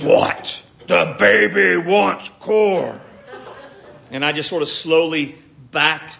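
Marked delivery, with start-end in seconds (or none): 0.0-3.0 very slow, loud, rough, creaky, menacing scary voice. Retelling what she said when caught eating corn from the can, imitating her scary voice. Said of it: "in really this scary voice".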